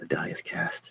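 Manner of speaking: whispered muttering. A game master voicing a character's line, whispering to himself. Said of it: "He's whispering to himself".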